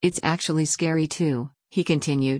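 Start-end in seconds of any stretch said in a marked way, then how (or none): none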